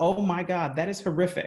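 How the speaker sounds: usual speaking voice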